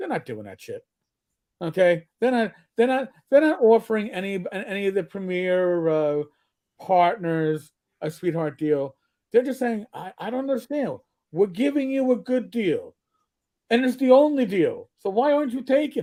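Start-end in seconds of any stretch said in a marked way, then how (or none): 9.9-16.0 wiseguy-style gangster voice. Acting out what they're saying to the premier partners, in a mobster voice. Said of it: "why are you sounding like a mobster right now?".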